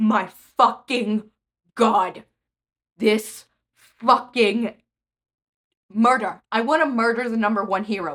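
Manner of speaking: trembling with rage. Reacting to someone who left others alone, shaking with rage. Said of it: "I am shaking with rage".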